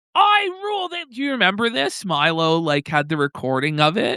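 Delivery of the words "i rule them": imitated screaming voice, pitched higher. Retelling a recorded meeting where Richard Spencer screamed: imitating Richard Spencer screaming. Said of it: "where he's screaming".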